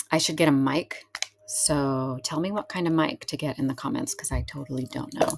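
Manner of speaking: quiet, hushed whisper. Talking to viewers while a lawnmower runs outside, whispering. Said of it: "I don't know why I'm whispering right now".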